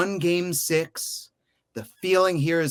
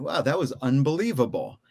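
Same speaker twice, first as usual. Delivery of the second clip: plain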